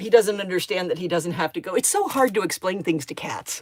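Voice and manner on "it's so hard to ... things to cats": ordinary talk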